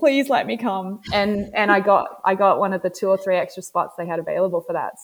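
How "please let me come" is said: put-on earnest, pleading, hard begging tone. Retelling how they asked to be let in: imitating own begging. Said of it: "I just begged unequivocally".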